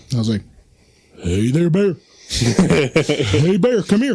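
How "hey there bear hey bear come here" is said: slow, drawn-out homemade animal-calling voice. Retelling calling to a bear at the zoo: imitating own bear call. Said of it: "here's my bear call".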